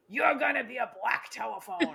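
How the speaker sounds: grisly, rough, rasping, creaky voice. Retelling how someone in a flip phone costume talked: imitating a grisly voice. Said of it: "he had this grisly voice".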